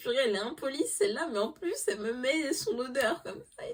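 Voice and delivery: high-pitched, fast, exasperated rant.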